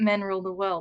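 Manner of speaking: ordinary delivery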